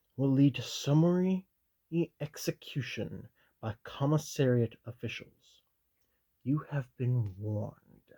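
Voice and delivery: ordinary delivery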